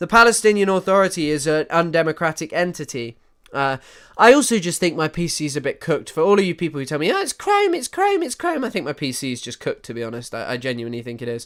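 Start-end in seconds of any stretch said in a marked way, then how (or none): 7.1-8.6 very high, silly, goofy put-on voice. Quoting people who tell the speaker the pc problem is chrome; silly put-on voice. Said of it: "sorry for doing a silly voice".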